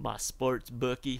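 put-on cowboy voice. A speaker explains he means his sports bookie, in a cowboy voice. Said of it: "Why am I talking like a cowboy?".

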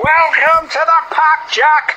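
welcoming, loud, high, drawn-out cheering. Narrating Alfie welcoming Jack to the pack, cheering. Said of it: "cheered Alfie".

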